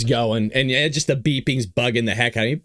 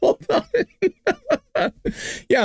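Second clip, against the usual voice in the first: talking through laughter, higher. Reacting to an arrest video on screen, laughing while talking. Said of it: "I'm laughing".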